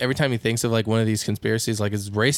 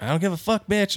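play-acted, high, screaming outburst; 9 semitones higher than usual. Retelling a joke screamed in a lady's face: imitating someone screaming. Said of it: "he's screaming in that lady's face".

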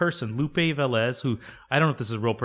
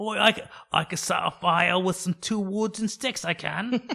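put-on British accent; 7 semitones higher than usual. Joking about a woman from an english village, the speaker does a put-on british accent. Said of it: "That's my British accent".

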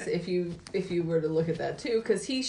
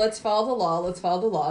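usual speaking voice

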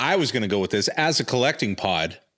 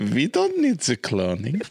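put-on German accent, swooping pitch; 2 semitones higher than usual. Playing a character in a Star Wars game, repeating her line: Frau Farbissina German accent. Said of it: "All I was doing was Frau Barman".

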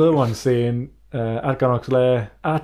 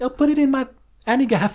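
very high-pitched put-on woman's voice; 12 semitones higher than usual. Answering in the joke porn line with a put-on woman's voice. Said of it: "And then I said it with a woman's voice".

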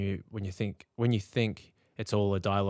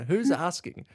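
put-on laughing while talking, higher and louder; 9 semitones higher, 4 dB louder than usual. Retelling a moment of cracking up inside their head: imitating own laughing. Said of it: "I'd start pissing myself laughing, going".

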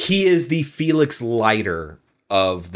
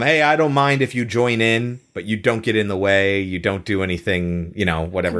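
ordinary delivery

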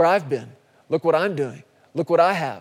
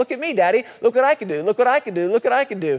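put-on high, small, childish little-kid way of talking; 6 semitones higher than usual. Describing how kids call for their parents' attention: imitating a small child. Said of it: "it's kinda cute when they're kids".

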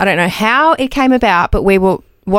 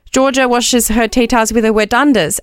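plain

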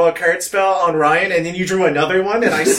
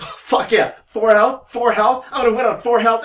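acted thrilled, excited crowing in a pitched-up voice; 5 semitones higher than usual. Retelling own past reaction at four health: imitating own excited self. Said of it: "that's why I was so excited".

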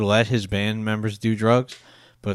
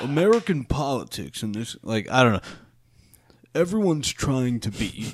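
put-on surfer voice, higher pitch; 4 semitones higher than usual. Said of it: "Why does he sound like a surfer?".

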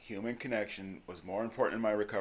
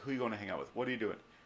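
put-on prying, suspicious, jealous tone; 4 dB quieter than usual. Retelling jealous questions about who she hangs out with: imitating jealous questioning. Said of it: "get all jealous".

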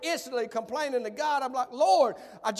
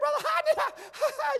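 put-on giggly woman's voice, laughing, much higher; 13 semitones higher than usual. Retelling how a woman stood up and addressed him, imitating a giggling woman. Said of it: "She talked like this".

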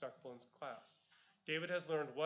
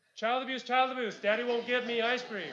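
put-on very loud, high-pitched, hollering child's yell; 8 semitones higher, 12 dB louder than usual. Acting out a daughter yelling out a car window: acting out a child yelling. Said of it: "yells out the window".

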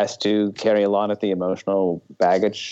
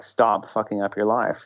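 mock-angry, pleading put-on voice. Discussing a film actor's line, imitating the anger in his voice, mock-angry plea. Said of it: "And a lot of anger".

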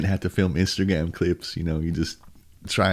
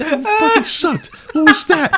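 very high, loud, taunting yell; 10 dB louder than usual. Retelling yelling at an eleven-year-old kid while skating: retelling a trash-talking yell. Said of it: "I'm talking shit to him while I'm skating".

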